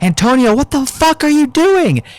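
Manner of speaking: put-on shrill yelled outburst, very high-pitched. Retelling a classmate's reaction to a flashlight shone in their eyes: imitating someone yelling. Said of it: "And they yell and grab their face and go".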